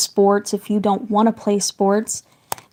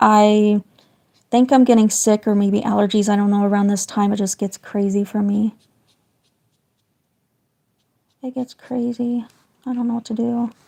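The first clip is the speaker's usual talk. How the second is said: raspy, hoarse voice. Apologizing to the chat while live drawing: raspy voice. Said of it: "excuse my raspy voice".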